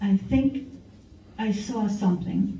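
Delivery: trembling, frightened, really shaky voice. Retelling a drive, quoting his sister after she saw something: imitating Deb's shaky voice. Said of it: "in a really shaky voice".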